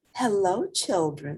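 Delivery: gentle, sweet-toned voice. Narrator reads a character greeting the children, in a sweet voice. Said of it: "someone said in a sweet voice".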